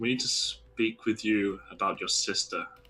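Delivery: understated, discreet, low-key tone. Speaking in character to a guard about his sister: fairly quiet tone. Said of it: "I'll say in, like, a fairly quiet tone".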